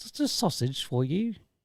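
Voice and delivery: slow, weak attempt at an English accent. Answering a request to say the line in an English accent. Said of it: "Can you do an English accent?".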